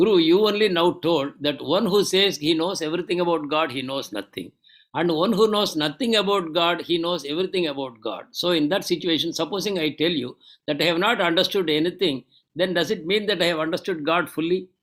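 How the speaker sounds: ordinary delivery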